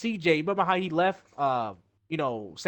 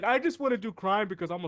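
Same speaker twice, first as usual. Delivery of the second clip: put-on mimicked spoiled-child voice; 3 semitones higher than usual. Describing a game's characters, the speaker acts one out: mocking a spoiled brat.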